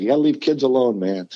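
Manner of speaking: plain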